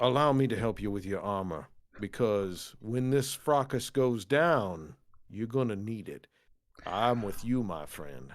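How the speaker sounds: private, confiding, just-between-us tone. Player speaking in character, turning to look at another character: hushed tones. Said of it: "under sort of hushed tones".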